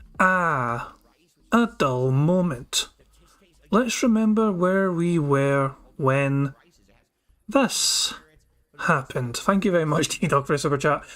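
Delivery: very slow, drawn-out, stalling reading pace. Reading out a viewer's super chat to stall, very slow reading. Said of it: "read this out in as slow a manner as possible".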